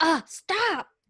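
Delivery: fed-up, exasperated yelling, high-pitched. Showing what yelling means for Tiffany: imitating Tiffany yelling. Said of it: "I just think that's yelling".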